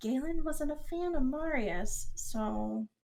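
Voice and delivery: very slow, soft, secretive half-whisper. Voicing a character telling Leon a secret: half-whispering. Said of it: "she whispers the next part to Leon".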